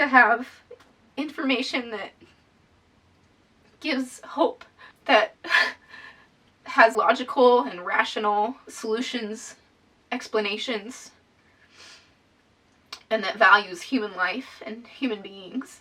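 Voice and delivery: choked-up, halting, emotional voice, struggling to speak clearly. Speaker explains what they have experienced themself, getting emotional. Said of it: "when I'm emotional, it's harder for me to speak clearly".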